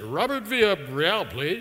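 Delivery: polished professional voice. Calling a lab and asking for someone by name, in your most professional voice. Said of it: "put on my most professional voice".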